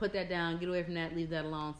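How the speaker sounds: usual speaking voice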